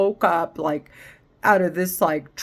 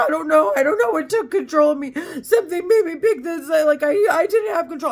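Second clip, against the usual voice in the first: mock hysterical sobbing, high, fast, words tumbling out; 11 semitones higher, 4 dB louder than usual. Retelling what a man said in a YouTube video: imitating hysterical crying. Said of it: "like hysterically crying".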